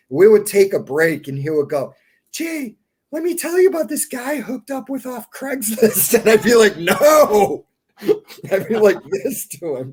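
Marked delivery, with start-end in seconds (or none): 2.4-6.2 super high-pitched, whiny voice. Recounting what a man would say during breaks, imitating a high whiny voice. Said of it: "super high pitched whiny voice".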